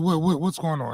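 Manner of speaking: normal talking voice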